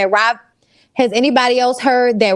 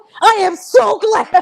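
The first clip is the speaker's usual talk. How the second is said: mock-screaming, acted-out scream; 10 semitones higher than usual. Retelling how she screamed the words out, retelling a scream. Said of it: "the way she was screaming it out".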